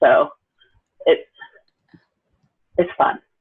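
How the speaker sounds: dry, deadpan, sarcastic delivery. Describing a browser bug that keeps coming back: sarcastic. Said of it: "I know you're being sarcastic".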